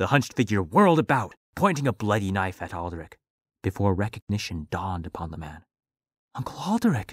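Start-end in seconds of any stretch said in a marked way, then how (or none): 6.3-7.1 exclaimed cry, very high pitch. Reading Delano recognizing his Uncle Alderic: exclaimed. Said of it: "Delano exclaimed".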